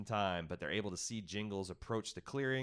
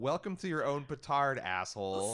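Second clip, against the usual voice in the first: plain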